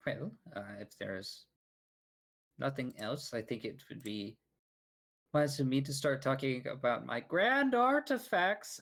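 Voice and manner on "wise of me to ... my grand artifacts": very high, raised voice lifted to carry. Voicing a character turning to address the crowd: raised voice. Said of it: "as he kind of raises his voice".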